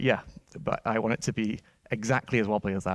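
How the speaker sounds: dry, mock-approving, sarcastic agreeing tone. Retelling own reply about a wobbly controller design: retelling a sarcastic remark. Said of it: "sarcastically, obviously".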